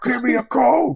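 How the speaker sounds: very high, loud, frustrated shouting. A grown man retells yelling inside his tiny car: retelling yelling at a car. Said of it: "This grown man yelling at this tiny little car".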